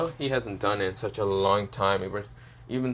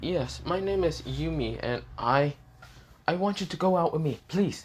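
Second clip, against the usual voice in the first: timid, bashful, shy voice, pitched up; 7 semitones higher than usual. Reading the story, the narrator voices a girl asking Issa out in Yumi's shy quiet tone. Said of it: "she says it in a very shy but quiet tone".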